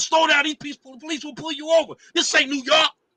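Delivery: put-on shrill, yelling, shouting in a country accent. Retelling a woman yelling at him from her car on the highway: retelling a scream in country accent. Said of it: "screaming in a country accent".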